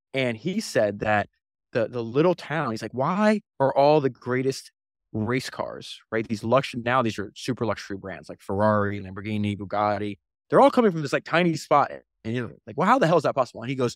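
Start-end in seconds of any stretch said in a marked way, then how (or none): none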